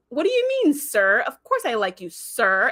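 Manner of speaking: mock disdainful, snide politeness, leaning on "sir". Recapping an episode, the speaker acts out one character answering another; retelling a disdainful 'sir'. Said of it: "he says sir with like the most attitude ever".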